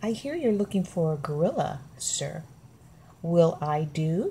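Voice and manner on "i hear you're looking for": plain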